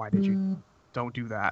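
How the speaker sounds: soft, hushed half-whisper under the breath. Voicing a character who leans in to the others: half-whispering. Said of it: "whisper to us".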